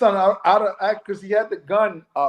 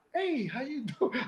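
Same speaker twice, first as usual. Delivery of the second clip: very quiet, gentle, soft, high, hushed voice; 5 semitones higher, 12 dB quieter than usual. Speaker shows how they greet someone to get them to calm down, quiet and soft. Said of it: "I'm trying to be so quiet and soft".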